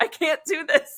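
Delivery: high, loud laughter full of exasperation. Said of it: "and I was like".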